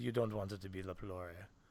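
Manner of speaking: put-on Eastern European accent. Retelling what a young doctor said: imitating an Eastern European accent. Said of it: "a East European accent".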